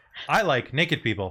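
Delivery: ordinary delivery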